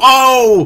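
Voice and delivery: high, loud, startled whoa blurted out. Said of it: "And then you're like".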